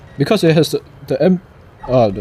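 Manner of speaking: stuttering, tripping over words. Explaining how fighter planes hold a point in a game, stuttering. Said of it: "sorry for stuttering".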